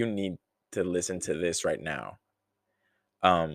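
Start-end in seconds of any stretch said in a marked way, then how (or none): none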